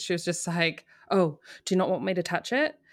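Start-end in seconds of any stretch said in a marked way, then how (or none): 1.1-2.7 mock-panicked, imitated anxious alarm. Retelling how a woman reacted to a comment about her hair, imitating her freaking out. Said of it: "she freaked out and she goes".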